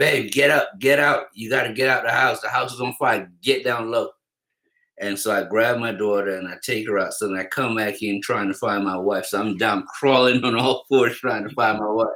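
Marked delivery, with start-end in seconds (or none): 0.0-4.1 put-on hurried, urgent, alarmed screaming. Recounting crawling through a burning house, speaker re-enacts screaming at his wife. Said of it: "I'm screaming at my wife".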